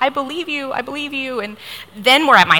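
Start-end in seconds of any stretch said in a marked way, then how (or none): 0.0-1.4 acted-out crying, tearful and pitched up. Retelling reassuring a frightened man who gave her a ride, retelling crying while reassuring. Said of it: "And so I'm crying".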